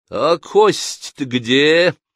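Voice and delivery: drawling, words broken up. Someone in the audience calls out during an actor's monologue, drawn out, mangling words. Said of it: "Протяжно, ломая слова".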